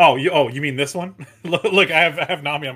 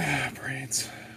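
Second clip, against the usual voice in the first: put-on undead monster groan; 13 dB quieter than usual. Trying out for a zombie role in a film, on the cue of action: zombie voice. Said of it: "I need a zombie for this next flick".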